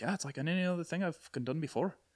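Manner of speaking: soft, high, quiet put-on Irish accent. Retelling Colin Farrell talking about his movie on The Nerdist: Colin Farrell accent. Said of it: "That's my Colin Farrell accent".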